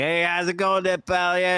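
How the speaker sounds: put-on chatty, high-pitched New York accent. Describing how some dudes talk, like Adam Sandler: imitating Adam Sandler's New York talk. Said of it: "I know a lot of dudes that talk like that".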